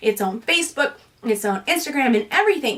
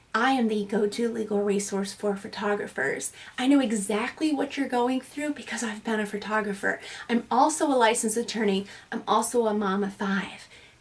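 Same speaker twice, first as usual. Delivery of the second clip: put-on, quieter imitated whisper; 3 semitones lower, 6 dB quieter than usual. Acting out walking up to a listener: imitating a whisper. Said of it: "walking up to you and whispering".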